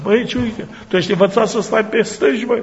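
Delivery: high-pitched teasing through a laugh. Speaker retelling what a man said while laughing at him, imitating someone laughing. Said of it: "Dar el râde".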